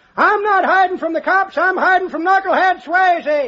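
mock shouting. Reminding his companion what he said earlier, imitating someone shouting. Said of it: "your loud mouth".

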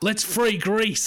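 put-on Australian voice forcing British accent. Retelling a tv actor's line, australian putting on british accent. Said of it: "you sound like Russell Crowe trying to do a British accent".

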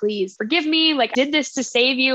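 mock imploring, heartbroken, pleading, begging voice. Retelling a show scene where a character pleads with him: imitating begging. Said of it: "begging him".

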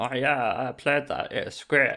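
casual, talkative tone. Imitating friends saying they played a game: imitating friends' voice. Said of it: "but not in that voice".

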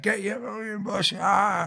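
very high, bawling, drawn-out rowdy shout. Retelling what the lads on the back rows shouted: imitating lads shouting. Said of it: "lads on the back rows just shouting".

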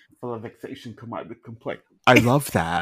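very quiet, barely audible character voice. Answering a request to say it in Lisa Barlow voice: Lisa Barlow voice. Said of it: "I love how you got into character".

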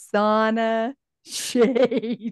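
very slow, every syllable stretched out. Retelling how they said a phrase again; very slow and loud. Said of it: "Really slow and loud".

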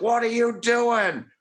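put-on very high, shrill, livid screaming yell. Retelling watching the Saints play, acting out screaming at the TV. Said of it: "screaming at the TV".

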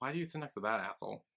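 very quiet, hushed half-whisper. Retelling what one person asked another: imitating a half-whisper. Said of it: "he kinda whispers to her".

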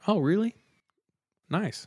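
super nonchalant, offhand tone. Retelling how a house owner answered: imitating a super nonchalant reply. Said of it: "he said super nonchalantly".

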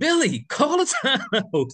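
frantic, very high screaming. Recalling an Eastern Conference Finals game, retelling your own screaming at the coach. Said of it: "And I'm screaming like".

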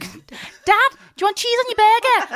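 put-on, very high, loud Liverpool Scouse accent. Retelling coming home at ten and speaking to dad: liverpool accent. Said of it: "Like that".

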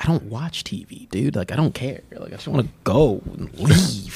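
soft whisper, under the breath. Retelling a running back's interview answer: imitating Jamal Williams whispering.

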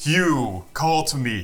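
big, booming put-on voice. In a game where yelling is a free action, calling out in a Zordon-like booming voice. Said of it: "like a booby voice I'll be like".

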